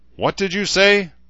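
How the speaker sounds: very high, loud, menacing and dangerous-sounding. A man confronts the trooper who just called him a coward, asking dangerously. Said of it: "Herzer asked dangerously".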